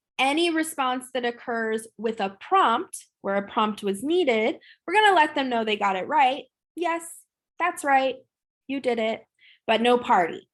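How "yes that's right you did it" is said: flat, level, matter-of-fact monotone. Showing how to praise a prompted response, without a party: monotone praise. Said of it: "it's kind of a more monotone type of thing".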